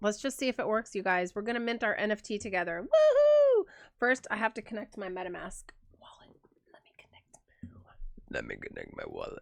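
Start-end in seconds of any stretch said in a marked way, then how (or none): 6.7-9.4 hushed, breathy, whispered put-on voice. Connecting a MetaMask wallet in front of the audience, in a put-on voice. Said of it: "I don't know why I did that voice".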